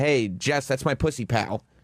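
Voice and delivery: ordinary delivery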